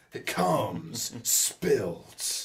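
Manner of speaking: generic movie trailer announcer narrator voice. Friends mock up a film trailer together, in a generic movie trailer voice. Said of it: "generic "in a world" kind of voice".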